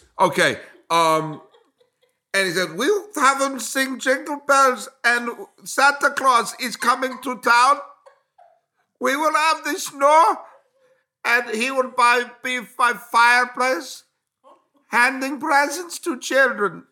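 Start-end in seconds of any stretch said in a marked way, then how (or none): 2.8-16.7 laid-on, put-on German accent, pitched up. Quoting what a man said, in a put-on German accent. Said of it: "You sound like a German sex worker".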